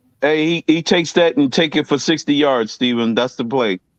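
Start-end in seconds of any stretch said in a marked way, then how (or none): none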